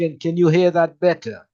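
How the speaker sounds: speaking loudly. Presenter asked by listeners to speak up, checking they hear better, speaking loudly. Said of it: "I'm talking quite loudly now".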